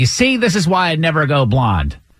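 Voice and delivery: put-on scolding tone. Retelling how the speaker's stylist spoke to a man in crisis, imitating a scolding stylist. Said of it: "my stylist is almost scolding him".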